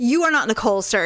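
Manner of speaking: put-on snippy attitude. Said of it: "With an attitude immediately".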